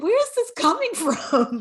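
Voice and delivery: loud, high laughing through tears.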